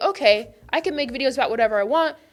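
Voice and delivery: ordinary talk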